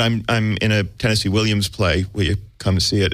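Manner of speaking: plain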